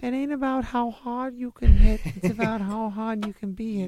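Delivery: very high, loud put-on voice. Quoting a movie line for friends in a put-on voice.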